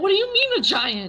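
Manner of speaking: very high, frantic, drawn-out panicked voice. Voicing a character hearing about giants: freaking out. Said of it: "Helga starts freaking out".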